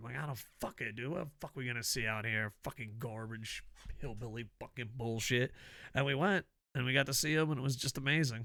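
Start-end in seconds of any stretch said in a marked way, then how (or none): 0.2-5.5 cranky, fed-up, angry, swearing outburst. Retelling his answer when asked why he was angry: imitating his own angry rant. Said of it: "why are you so angry".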